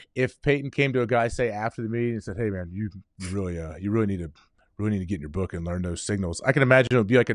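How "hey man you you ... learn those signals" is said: disappointed, scolding father voice. Imitating the quarterback telling a player to learn the signals: imitating Peyton. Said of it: "You sounded just like him right there".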